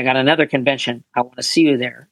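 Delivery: ordinary talk, nothing marked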